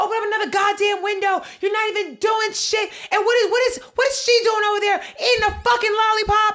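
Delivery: shrill, furious, out-of-control ranting. Recounting a woman who lost her temper with others, retelling a woman losing it. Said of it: "Loses her shit".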